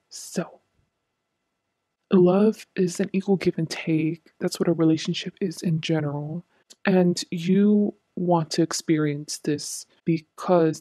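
whispering. Told they were too loud, the speaker keeps talking to viewers, whispering. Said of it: "now I'm gonna be whispering now".

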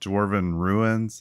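plain

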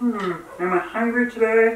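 put-on froggy puppet voice. Explaining a reflex with no brain activity, the speaker repeats the thought in a Kermit the Frog voice. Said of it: "my best Kermit the Frog voice".

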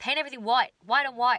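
put-on Australian presenter accent. Retelling what presenters on an Australian DIY channel keep saying: imitating Australian DIY presenters. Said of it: "this Australian D I Y channel and they're like".

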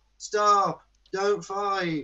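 play-acted weak, limp, feeble, pathetic voice. Retelling a scene where Burnham shouts to stop a fight: imitating Burnham's feeble, pathetic plea. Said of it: "in such a feeble, pathetic way".

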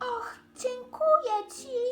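squeaking gratefully. The monkey speaks to the old buffalo who saved her, squeaking gratefully. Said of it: "pisnęła z wdzięcznością małpka".

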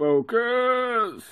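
silly, very high, drawn-out put-on voice. Speaker urges self to focus while waiting, in an odd put-on voice. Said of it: "Don't know why I do it in that sort of voice for".

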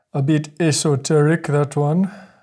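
put-on Jamaican accent, musing tone. Remarking on a quoted description, the speaker uses a Jamaican accent. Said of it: "excuse the Jamaican accent".

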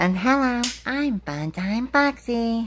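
very high-pitched character voice. Showing which voice will be used for each character, in a Funtime Foxy voice. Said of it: "So that's their voices".

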